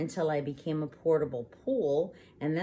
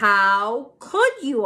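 full-volume, very loud, swooping, stretched-out scream; 7 semitones higher, 11 dB louder than usual. After a photo of the narrator's dad gets eaten, the narrator is screaming. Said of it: "I screamed".

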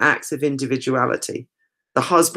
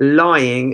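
emphasis on the word 'lying'; 4 dB louder than usual. Explaining a picture's meaning and pointing out a play on words: stress on 'lying'. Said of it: "I'm stressing the word lying there".

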